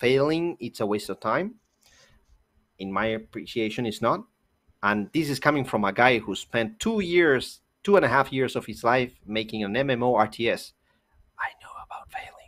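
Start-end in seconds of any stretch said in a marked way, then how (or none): 11.4-12.3 hushed, breathy whisper, barely above breath. Speaker who spent years making an MMORTS, on failing; whispering.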